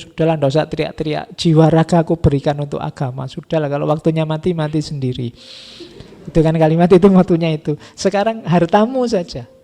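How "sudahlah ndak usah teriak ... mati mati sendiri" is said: normal talking voice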